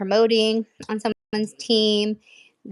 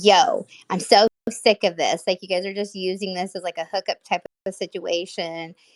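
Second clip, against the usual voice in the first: normal talking voice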